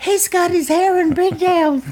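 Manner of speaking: mock, very high-pitched mimicking voice. Repeating what the other speaker said earlier, in a really high voice. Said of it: "I said it in a really high voice like that?".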